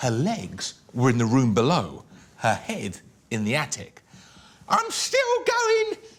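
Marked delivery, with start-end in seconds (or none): 4.7-6.0 put-on old screechy voice, much higher, louder. Reading a story, the narrator voices Grandma calling from above in an old screechy voice. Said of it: "came the old screechy voice from up above".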